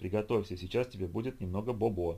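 ordinary delivery, nothing marked

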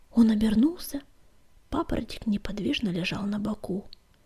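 ordinary talk

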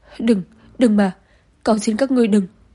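loud, panicked, terrified pleading cry. A woman backs away from laughing men, pleading with them, terrified shout. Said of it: "hoảng sợ la to".

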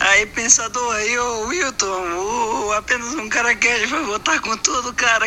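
put-on high, drunk-sounding rambling.

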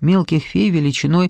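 ordinary delivery

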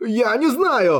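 sudden, hasty, high, blurted out. A narrator reads a vagrant answering his questioner, blurted out. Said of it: "выпалил он".

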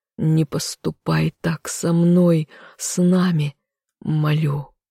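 hoarse trembling whisper. A man begs the woman who will marry another, in a hoarse, trembling whisper. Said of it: "хриплым дрожащим голосом прошептал он".

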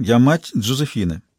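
plain reading voice

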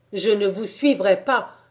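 loud outcry. Narrator reads the first-person hero answering his companion, crying out. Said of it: "m'écriai-je".

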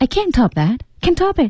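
can't stressed hard and high.

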